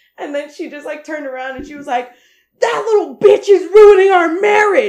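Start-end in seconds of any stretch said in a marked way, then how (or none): 2.6-4.9 very loud, high, furious, angry scream. Retelling how a grandmother turned around mid-fight: imitating someone screaming angrily. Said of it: "she started screaming".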